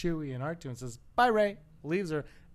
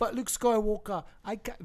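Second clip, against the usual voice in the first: put-on pleading orphan voice, much higher; 6 semitones higher than usual. Retelling a scene where Rey answers Luke Skywalker, Rey impression like Oliver Twist. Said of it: "That's more like Oliver twist".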